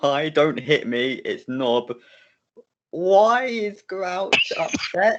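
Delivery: calling out loudly across a distance. A player's character calls out to another character nearby, shouting over. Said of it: "I'm gonna shout over".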